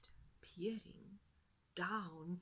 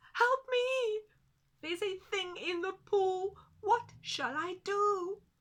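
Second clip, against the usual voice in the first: very high, loud, frightened squeaky cry; 12 semitones higher, 12 dB louder than usual. Narrator reads a frightened animal calling up a tree for help, squeaky, scared voice. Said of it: "she called in her squeaky, scared voice".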